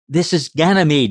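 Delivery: tight, tense, strained voice. A voice over the microphone answers a mail ship from Earth, tense voice. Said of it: "a tense voice said".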